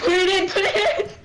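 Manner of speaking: very high, loud shrieking scream through laughter. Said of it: "We were just screaming".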